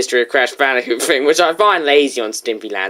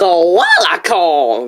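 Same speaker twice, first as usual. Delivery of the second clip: bad, swooping fake Australian accent; 4 semitones higher, 3 dB louder than usual. Talking with co-players, one says a line in a bad Australian accent. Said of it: "That did not sound Australian".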